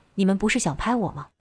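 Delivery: plain reading voice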